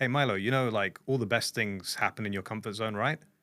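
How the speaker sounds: ordinary talk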